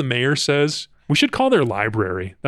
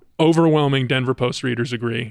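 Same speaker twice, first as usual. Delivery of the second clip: plain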